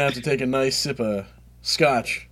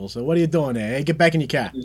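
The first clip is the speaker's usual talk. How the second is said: put-on New England accent, higher; 3 semitones higher than usual. Talking about accents, the speaker shows off a New England accent. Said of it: "the New England accent is really fun to do".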